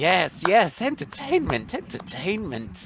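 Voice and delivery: high, swooping, sing-song cackling voice. The narrator voices the evil drow priestess Ilvara as she starts cackling and clapping. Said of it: "In this video we join Drin and Elkfein the brothers Drow as they attempt to survive the machinations of the evil Drow Priestess Illvara Mizzrym while their chain gang is searching for a long lost tomb".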